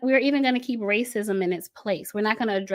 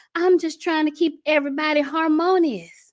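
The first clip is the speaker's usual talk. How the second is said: put-on folksy rural country accent, pitched up; 6 semitones higher than usual. Speaker voicing the king at the top in an analogy, country accent. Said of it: "I don't know why I started talking in a country accent".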